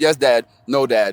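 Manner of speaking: ordinary talk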